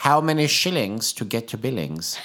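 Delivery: put-on imitation of a British accent. Retelling a joke once told to a spouse: imitating own British accent. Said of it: "I said it in a British accent".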